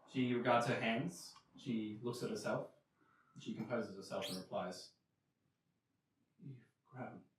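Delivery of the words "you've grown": very soft, very quiet, hoarse whisper. Voicing an undead mother greeting her grown son: hoarse whisper. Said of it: "in this, uh, hoarse whisper".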